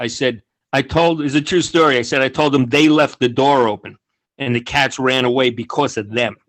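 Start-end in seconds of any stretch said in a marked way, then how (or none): none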